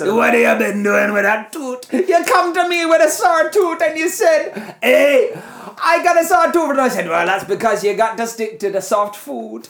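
put-on Jamaican-accented dentist voice. Redoing an old bit for the friend who saw it: Rasta dentist voice. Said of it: "you turned into a Rasta dentist".

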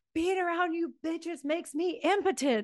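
acted hollering yell. Quoting what a man yelled at other road bike racers, retelling a yell. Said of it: "he's yelling at this at other road bike racers".

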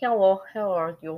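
put-on male Russian accent. Speaker showing how they speak english with an accent, male russian accent. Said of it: "I can do a female Russian accent, but it's mainly I was taught male".

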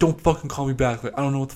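put-on, mock-furious, super angry delivery. Retelling a confusing phone call, imitating the caller super pissed. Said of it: "he was like super pissed".

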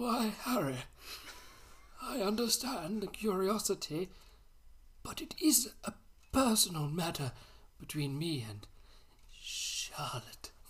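put-on very slow, breathy old-man voice, drawn out. Reading a story aloud, giving Dumbledore's reply to Harry in an old-man voice. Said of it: "put on an old man's voice".

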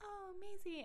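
put-on very high little baby voice. Speaker describing a video, voicing Callie as Maisie comes over: imitating Callie. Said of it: "Callie being like".

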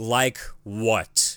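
slow angry voice. Retelling a movie scene where he comes back: imitating slow angry reply. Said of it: "slowly and angrily".

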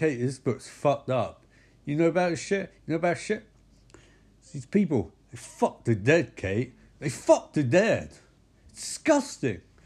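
complaining outburst. Retelling a film scene, reading a book in bed: imitating Micah. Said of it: "And he's sort of like".

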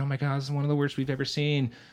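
acted, high, rushed scream of alarm. Telling a story about a ski accident and the emergency room, imitating nurses screaming. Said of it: "Nurses are screaming".

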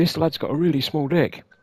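acted-out shout. Telling a story, the speaker repeats what a lad shouted after running back: retelling a shout. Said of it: "started shouting".

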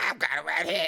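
goofy, game character voice. Imagining a movie scene, acting out the hero's reply in an Ernest impression. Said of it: "That's my best Ernest impression".

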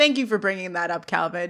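ordinary delivery

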